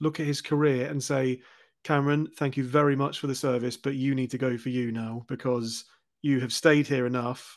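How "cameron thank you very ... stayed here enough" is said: usual speaking voice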